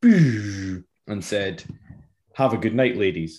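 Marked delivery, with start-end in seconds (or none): 2.3-3.4 slightly sarcastic, acted-out tone. Retelling a farewell called through a car window: retelling a sarcastic farewell. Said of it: "It was a little bit sarcastic".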